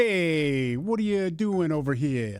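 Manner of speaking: put-on New York accent, drawn-out hey. Asked what a new york accent sounds like, demonstrating it: new york accent. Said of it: "What does a New York accent sound like to you?".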